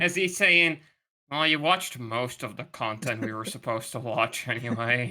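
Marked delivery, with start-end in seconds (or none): 1.3-5.1 put-on beaten, given-up, resigned tone. Imitating another speaker's reply to the others: imitating a defeated voice. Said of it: "I can hear the, the defeat in his voice".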